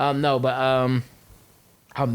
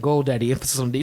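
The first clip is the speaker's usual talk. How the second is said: normal talking voice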